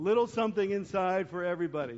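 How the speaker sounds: heavy stress on the word little. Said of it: "emphasis on little".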